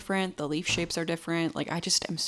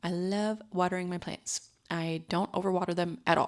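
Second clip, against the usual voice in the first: plain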